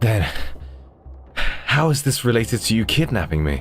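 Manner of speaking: pained, strained voice. A wounded character questions his kidnapper, speaking through pain. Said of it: "I endure the pain and continue speaking".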